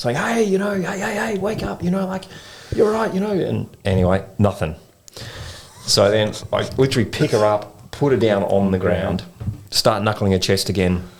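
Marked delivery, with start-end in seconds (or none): 0.2-3.3 high-pitched, loud yelling. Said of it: "yelling at her, saying".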